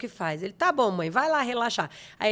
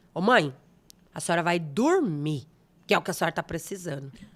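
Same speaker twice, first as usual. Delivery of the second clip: put-on firm, strong, forceful, commanding tone; 4 semitones lower than usual. Retelling what a son said from the sofa: imitating son's strong voice. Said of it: "uma voz forte".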